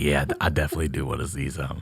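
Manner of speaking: mock whisper. Playing along with a whispered offer: put-on lowered voice. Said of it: "I'll lower it back too".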